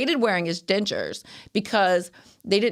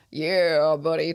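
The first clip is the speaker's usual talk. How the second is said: put-on Southern accent, pitched much lower; 3 semitones lower than usual. Describing how someone mimicked his dad's speech; put-on Southern Creole accent. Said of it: "He kind of talks like this, like he's from the South".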